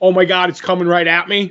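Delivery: ordinary delivery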